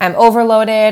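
ordinary talk

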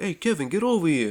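put-on Chicago Italian accent. Arguing about a family, the speaker imagines them talking in Chicago Italian accents. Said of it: "the Chicago Italian accents".

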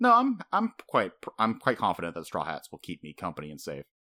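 acted, glowing, happy, proud, swooping delivery. Retelling a character's answer about staying safe: imitating Robin, happy and proud. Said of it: "she was just so happy and proud, going".

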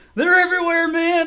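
freaked-out, terrified scream, very high and loud. Retelling a game character freaking out in a corner: imitating someone screaming. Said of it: "freaking out and screaming".

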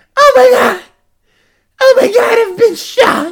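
shrill, very high scream at full volume. Retelling a video of a man who has been shot: imitating a man screaming.

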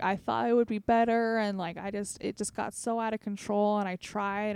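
acted, tearful outpouring spoken through sobs. Retelling a teenage friend's words as he cried in the office: imitating someone sobbing. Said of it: "he's just sobbing because he's just like".

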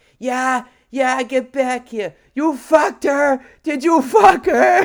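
wild, shrill, loud screaming. Retelling a woman in the street yelling after a man: retelling a woman's screaming. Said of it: "And she's just out screaming".

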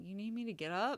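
grumbling, half-hearted tone. Speaker retells his reply when she called him to the bathroom, retelling a grumble. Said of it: "he kind of grumbled like".

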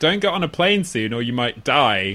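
ordinary delivery

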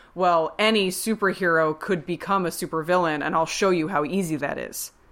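ordinary talk

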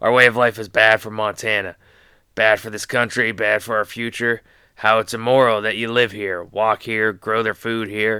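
hoarse impersonation voice. Carrying on with an impression that hurts your throat, use a raspy Kevin Costner voice. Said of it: "in my raspy Kevin Costner voice".

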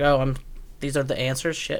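plain

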